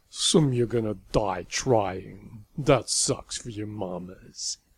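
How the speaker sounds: sneering. A man sneering at a small, determined group of home runners. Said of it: "Bunt sneered at the small, determined group".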